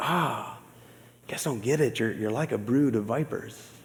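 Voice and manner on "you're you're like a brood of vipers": kind, gentle, loving tone, not exclaimed. Showing Jesus's words said in a loving way: gentle, no exclamation. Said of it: "saying that in a loving way? ... it lacks the exclamation point".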